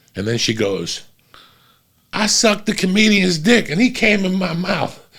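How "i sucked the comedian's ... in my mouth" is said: mock weepy, blubbering, high sobbing voice. Retelling his set when a woman in the showroom starts crying, imitating her crying. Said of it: "This chick starts crying".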